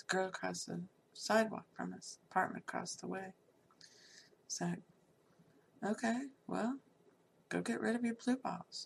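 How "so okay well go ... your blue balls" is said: dry, sarcastic, mock-permissive tone. Retelling what she told him about the girl across the way, retelling her own sarcasm. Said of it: "I was being sarcastic".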